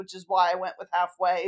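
usual speaking voice

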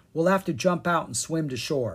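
plain reading voice

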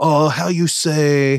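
put-on drawn-out accented English. Retelling how a college friend with an accent always talked: imitating Mike De Guzman's accent. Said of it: "So he totally had an accent".

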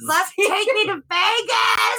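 very high, very slow, drawn-out scream. Retelling a chaotic ride, quoting a passenger in the back, retelling a scream. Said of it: "Steve's screaming".

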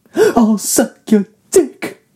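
poorly done, very high-pitched junkie voice. Acting out a crack addict looking for cocaine: terrible crack addict impression. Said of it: "Terrible impression".

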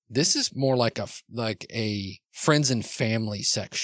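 ordinary delivery

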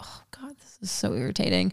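unvoiced, soft whisper.

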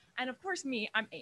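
ordinary delivery

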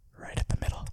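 whispered words. Repeating the words after the other speaker asks: whispering. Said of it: "I had to whisper it".

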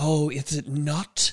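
put-on reptilian storybook snake voice. Echoing the other reader's line, snake voice. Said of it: "Good snake voice".

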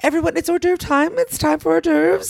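shrill, very high, put-on announcer voice. Retelling mother ringing a bell to announce hors d'oeuvres: imitating mother's fake voice. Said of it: "she'd do it in a fake voice".

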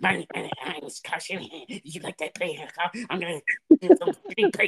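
high, swooping cartoon voice with swinging pitch. Mocking a football coach's play calls with a Butt-Head impression. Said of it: "I'm doing that B S Butthead impression".

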